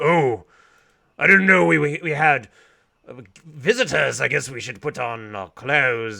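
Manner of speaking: goblin voice, stammering and tripping over words. Voicing goblins who come out of a back room: goblin voice. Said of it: "They're like".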